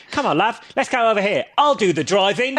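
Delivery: bad, dodgy put-on Cockney accent. Describing how a dubbed show's main character sounded: dodgy Michael Caine-esque Cockney. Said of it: "dodgy, like, Michael Caine-esque Cockney accent".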